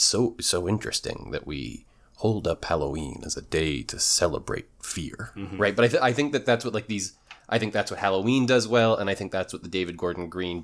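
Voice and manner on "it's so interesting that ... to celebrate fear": creepy, sinister, menacing voice. Speaker quoting an actor's Halloween-episode monologue, creepy Ultron voice. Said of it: "in his creepy Ultron voice".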